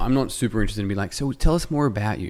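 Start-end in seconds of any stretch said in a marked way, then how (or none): 1.1-2.3 terrible put-on American accent, pitched high. A speaker slips into a put-on American accent mid-explanation. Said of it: "I don't know why I got an American accent".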